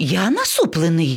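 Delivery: astonished, surprised outcry. The parrot answers the lion cub, who asks why he frowns, exclaiming in surprise. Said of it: "здивовано вигукнув папуга".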